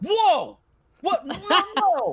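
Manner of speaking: floored, stunned disbelief, very high-pitched. Retelling a reveal after taking off a mask: imitating someone shocked. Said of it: "he looked at me and he goes".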